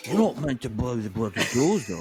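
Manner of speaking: bad put-on Cockney accent. Trying the same film line: failed Michael Caine impression. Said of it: "I can't do it, see?".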